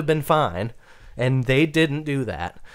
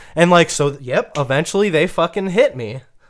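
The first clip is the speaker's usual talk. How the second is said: usual speaking voice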